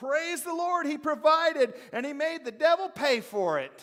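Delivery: very loud, very high exultant joyful voice. Telling a story, acting out a woman praising God even louder. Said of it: "started praising even louder".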